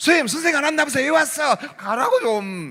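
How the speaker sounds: high, loud, mocking and teasing taunt.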